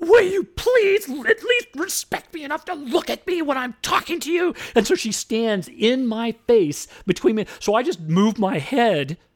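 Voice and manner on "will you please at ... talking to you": piercing, shrill, very high-pitched voice. Retelling a woman confronting them while they speak to a judge, high shrill voice. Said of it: "She's using a high voice. She's shrill".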